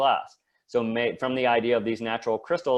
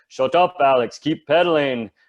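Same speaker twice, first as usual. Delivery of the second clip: loud, clumsy, put-on German accent; 4 semitones higher, 8 dB louder than usual. Retelling what german teammates kept saying during a ride, in a german accent. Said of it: "Excuse my German accent".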